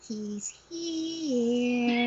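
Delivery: eerie, haunting, spooky put-on voice, drawn out. Retelling Georgia spotting Justin around a corner, Poltergeist voice. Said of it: "in the poltergeist voice".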